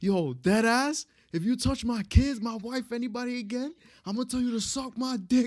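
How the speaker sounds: put-on shrill scream, pitched very high. Picturing a New York version of Marty: Marty screaming at Frank Sr. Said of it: "he was screaming at Frank Sr".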